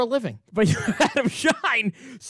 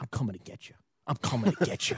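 put-on creepy whisper, lower and quieter; 9 semitones lower, 10 dB quieter than usual. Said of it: "What are you gonna whisper".

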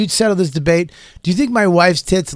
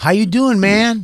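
odd, affected put-on tone, high and slow; 5 semitones higher than usual. Suggesting a simple text message to send, put-on weird tone. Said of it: "Without that weird tone I just gave you".

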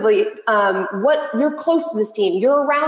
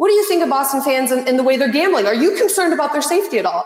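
high, fast, sarcastic with mock concern. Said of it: "I'm being sort of sarcastic".

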